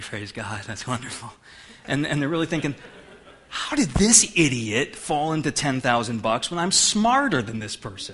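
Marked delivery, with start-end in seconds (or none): 0.0-1.3 mock gritted-teeth voice, lower and quieter. Acting out people hearing about someone's promotion, mock praise through gritted teeth. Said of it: "Through gritted teeth".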